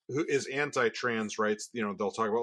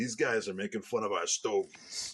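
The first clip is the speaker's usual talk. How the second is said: put-on Cuban gangster accent; 3 semitones lower, 4 dB quieter than usual. Joking about a Cuban cigar cartel, the speaker puts on a Cuban cigar accent. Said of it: "that's my Cuban cigar accent".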